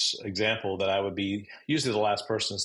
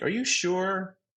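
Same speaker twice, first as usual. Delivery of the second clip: rising question-like tune on the word sure; 10 semitones higher than usual. Showing how a question sounds when asked: higher pitch, rising question. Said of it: "you end up with a higher pitch tone".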